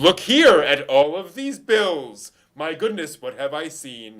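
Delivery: very loud, bellowed, bad character voice. Acting out a bad dubbed line: Professor Zenigata voice. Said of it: "Professor Zenigata in the".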